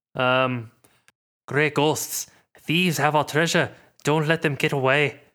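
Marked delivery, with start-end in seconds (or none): 1.5-5.1 amateur attempt at a Scottish accent. Prompted to do the voice, a player speaks a character's line: attempted Scottish accent. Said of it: "Scottish, you racist".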